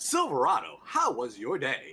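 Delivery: showy, swooping, sing-song parody news-anchor delivery. Imitating a video narrator who talks like a parody news anchor: imitating a parody news anchor voice. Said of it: "he talks like this".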